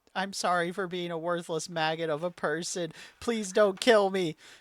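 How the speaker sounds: put-on sobbing, pleading tone. Telling a story, voicing a man apologizing to a woman, acting out a sobbing plea. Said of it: "he starts sobbing".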